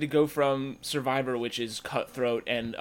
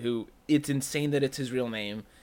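ordinary delivery

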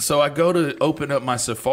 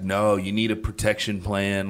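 plain

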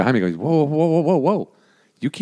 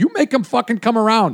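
mock heated shout, very high-pitched; 11 semitones higher than usual. Retelling an argument with executives, yelling at Mark Herwick. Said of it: "in like a heated argument".

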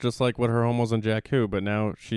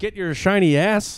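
mock excited, high, drawn-out, stretched-out shout; 8 semitones higher, 4 dB louder than usual. Quoting a movie character's line to the others: imitating someone yelling. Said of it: "You don't need to yell".

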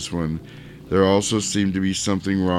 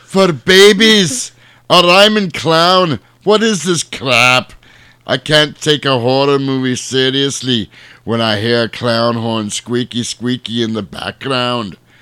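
very loud, high-pitched holler; 5 semitones higher, 9 dB louder than usual. Reading a bad movie review aloud, in a Fat Bastard voice. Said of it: "I'm gonna read this one like Fat Bastard".

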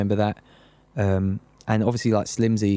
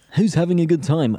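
over-the-top cheesy radio DJ voice, pitched up; 7 semitones higher, 4 dB louder than usual. Imitating cheesy Sunday afternoon style radio DJs: cheesy radio DJ voice. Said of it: "sounded like cheesy, like Sunday afternoon Heart FM style DJs ... It's my impression of one of the guys that used to be on Rinse".

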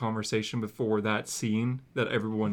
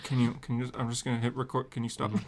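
normal talking voice

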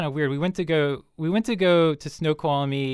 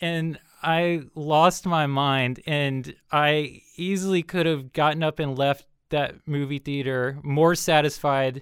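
plain

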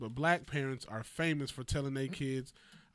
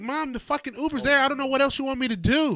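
very high, very loud, shrill yell; 11 semitones higher, 10 dB louder than usual. Retelling a girl cursing at her mom over an uber: imitating a girl yelling. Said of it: "she was, like, yelling".

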